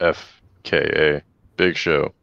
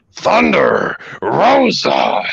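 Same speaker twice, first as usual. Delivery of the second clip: belted out very high, loud and big; 14 semitones higher, 6 dB louder than usual. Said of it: "I'm gonna try my best to, um, do a little impersonation of it".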